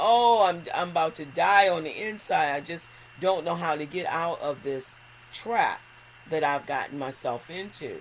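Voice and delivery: ordinary talk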